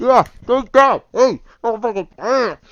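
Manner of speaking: put-on muffled, high New York accent scream. Narrating a scene, voicing someone screaming muffled by clothing in a New York accent. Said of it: "screaming in a New York accent, muffled by clothing".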